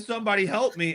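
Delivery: screamed out loudly. Retelling a movie scene where the building caves in: imitating Spider-Man screaming. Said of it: "he's screaming".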